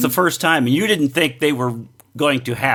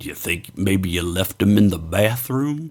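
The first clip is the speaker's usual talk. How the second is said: silky, smooth, low, even delivery; 6 semitones lower than usual. Retelling a backstage moment from last night, imitating William's smooth voice. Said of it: "William in his smooth voice goes".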